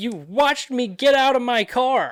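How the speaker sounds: high, loud, slow, incredulous accusing voice. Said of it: "I was like".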